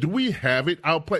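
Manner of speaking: ordinary talk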